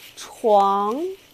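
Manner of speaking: rising tone on 床. Teaching the first character: rising tone on 床, getting louder. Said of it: "your voice become more and more, you know, higher, more and more louder".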